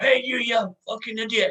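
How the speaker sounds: very high-pitched, loud shouting. Acting out someone in the audience shouting at the band: imitating someone shouting. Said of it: "when someone's shouting".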